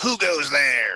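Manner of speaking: put-on, trying-hard, menacing mean voice. Players in a treehouse hear a knock underneath; one calls out in a mean voice. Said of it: "That's me trying to make like a mean voice".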